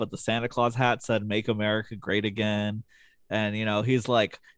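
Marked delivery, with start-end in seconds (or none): none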